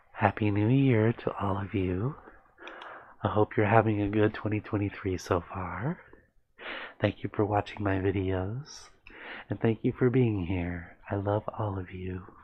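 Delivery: gentle, soft, hushed ASMR-style half-whisper. Answering a viewer's comment, the video maker greets her audience in a soft ASMR half-whisper. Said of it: "There's some A S M R for you".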